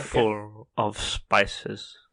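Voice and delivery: pinched-nose, nasal put-on movie-star voice. After being told to pinch the nose, doing an Alan Rickman impression with pinched nose. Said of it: "do an Alan Rickman impression and then pinch your nose".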